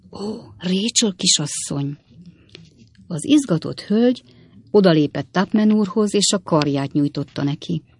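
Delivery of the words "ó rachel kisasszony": soft, hushed half-whisper. Mr. Tupman, leaning on Miss Rachel's arm, adds a word to her, half-whispered. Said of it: "Aztán suttogva hozzátette".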